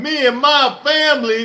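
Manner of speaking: deliberate, slow, every word drawn out. Joking about talking like Brian Kelly tomorrow, imitating his fake accent. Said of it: "should I talk like, uh, Brian Kelly?".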